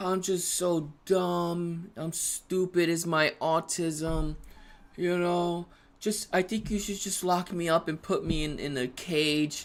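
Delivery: put-on sorry, sulking child voice, "dumb" drawn out. Retelling the nephew's apology after his mother yelled at him: imitating a sad child. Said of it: "he gets all sad".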